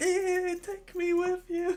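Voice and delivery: mock frightened, drawn-out, very high plea. Retelling a scene from the book, imitating a scared Regis voice. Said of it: "So scared".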